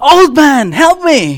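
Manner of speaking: loud high-pitched cry. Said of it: "John calls out to me".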